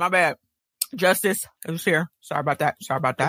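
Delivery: speaking with mouth full of food. Podcast co-host apologizes for staying silent, talking with a mouthful of grapes. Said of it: "I got a mouthful of grapes".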